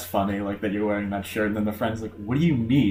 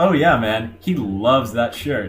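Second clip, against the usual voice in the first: somewhat sarcastic tone; 4 dB louder than usual. Suggesting how to deliver a line, saying it kind of sarcastically. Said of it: "say it like kind of sarcastically".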